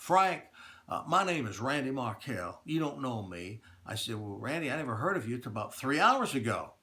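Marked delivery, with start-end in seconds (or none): 0.0-3.6 put-on speaking in a Texas accent, like a phone caller. Retelling a phone call from a stranger: imitating Randy Markell's Texas accent. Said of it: "in a Texas accent".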